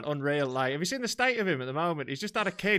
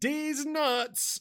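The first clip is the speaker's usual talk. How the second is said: mock full-lung shout, much higher pitched; 11 semitones higher than usual. Retelling his answer to a woman's quiz question: retelling a full-lung shout. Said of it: "I shouted back at the top of my lungs".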